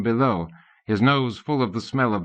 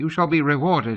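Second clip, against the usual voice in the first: small, thin little king's voice; 4 semitones higher than usual. Reading a story, the king promising a reward: tiny voice. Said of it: "the king went on in his tiny voice".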